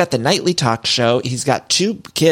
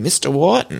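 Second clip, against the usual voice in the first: loose, put-on Boston accent; 2 semitones higher than usual. Retelling the boyfriend saying the wrong name: imitating a Boston-y accent. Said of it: "a Boston-y accent".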